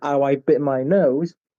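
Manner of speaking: ordinary delivery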